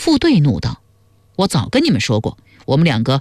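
ordinary delivery

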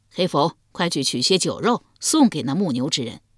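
plain

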